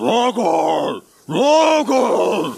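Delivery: creature roaring one word.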